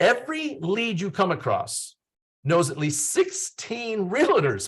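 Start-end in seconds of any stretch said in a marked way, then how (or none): 3.1-4.7 voice cracking partway through, pitched up. Speaking to realtors, the speaker gives a stat about leads: voice cracking. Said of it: "My voice cracked when I said that".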